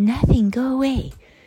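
mock, very high, shrill scream. Telling listeners what their mom screamed out: retelling a scream. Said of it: "my mom screamed out".

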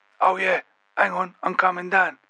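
put-on husky, high-pitched East London accent. Narrator voicing a man answering Mackie from behind a door, Curtis Davey's husky East London accent. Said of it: "speak in a husky East London accent with a high timbre".

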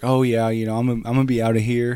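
ordinary talk, nothing marked

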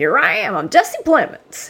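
hammy, bad, high, swooping, sing-song put-on country accent. Mimicking an actor's entrance in a trailer: terrible Jesse Plemons accent. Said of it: "That accent was so terrible".

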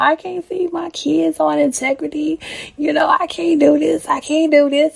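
mock screaming. Quoting a man arguing against a woman's point, retelling his scream. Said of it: "he's screaming".

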